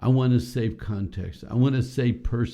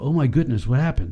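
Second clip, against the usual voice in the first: matching urgent tone; 3 semitones higher than usual. Demonstrating how to match someone excited, replying in a matched urgent tone. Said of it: "You match them".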